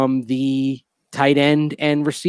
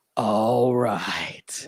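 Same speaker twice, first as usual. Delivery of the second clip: low, husky, breathless murmur; 4 semitones lower, 7 dB quieter than usual. Showing how you got to say it right, the speaker does a husky, breathless Brock Olivo impression. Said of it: "that little huskiness in your voice, that, and the br- little bit of that breathless quality that Brock Olivo".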